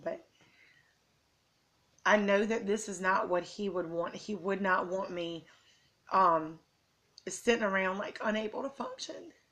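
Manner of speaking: emotional voice, fighting back tears. Parent speaks to listeners about her son Micah, getting emotional. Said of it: "I'm sorry, I want to get emotional".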